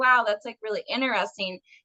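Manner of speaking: ordinary delivery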